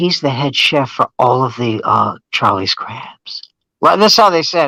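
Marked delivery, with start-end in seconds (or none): 0.0-3.4 hushed, lowered voice. Speaker retells what others said to him about a man, imitating hushed tones. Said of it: "in in hushed tones".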